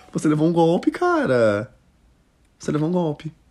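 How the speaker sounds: laughing, high, swooping, 'cara' stretched. Host reacts to a story of a date who vanished after she paid, laughing. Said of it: "Eu tô rindo, mas é com respeito".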